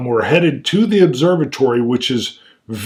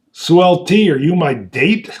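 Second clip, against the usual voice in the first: mock sarcastic tone, much higher pitch; 3 semitones higher than usual. Speaker recounting a character's line from a scene, retelling a sarcastic question. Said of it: "it's said in that sarcastic tone".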